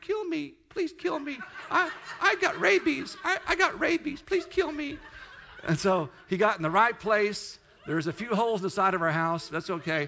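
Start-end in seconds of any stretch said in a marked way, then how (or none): 0.0-5.0 very high, whining, weepy whimpering cry. Retelling a suffering bat's pleas, imitating it whining and crying. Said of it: "I'm going to say he was whining, crying".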